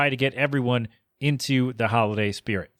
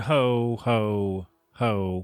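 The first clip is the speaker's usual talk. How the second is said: creepy, unsettling, off-kilter ho ho ho; 2 semitones lower than usual. Saying a holiday greeting like the creepy Santa from A Christmas Story. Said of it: "the creepy Santa from Christmas Story".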